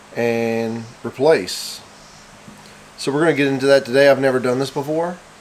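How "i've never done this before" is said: usual speaking voice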